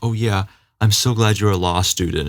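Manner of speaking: put-on facetious fake-nice voice. Retelling a film character's fake-nice line: imitating Max's facetious tone. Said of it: "in a very facetious way".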